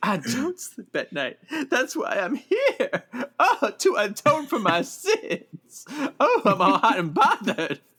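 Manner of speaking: very high, dramatic voice swooping up and down. Recapping a show, quoting Doctor Deb's reply to Logan, mock-dramatic churchgoer. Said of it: "turning into a dramatic churchgoer".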